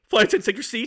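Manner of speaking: voice cracking. Retelling a turbulent flight, quoting the pilot's second call with his voice cracking. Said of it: "his voice like cracked".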